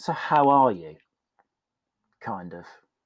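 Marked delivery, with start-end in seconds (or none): 0.0-1.0 kindly, gentle, probing and inquisitive tone. Retelling how she leaned in a third time and asked, imitating her inquisitive but gentle tone. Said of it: "An inquisitive but gentle tone".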